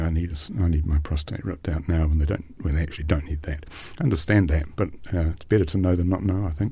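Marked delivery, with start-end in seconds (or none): none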